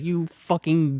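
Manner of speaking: high-pitched screaming. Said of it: "he's screaming, like".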